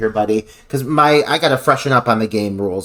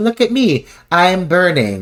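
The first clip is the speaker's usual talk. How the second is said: slow, pitched-up, cringy announcer-style delivery; 6 semitones higher than usual. Mocking a character's line while discussing a scene: imitating Alyssa's cringy announcing. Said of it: "but announcing it".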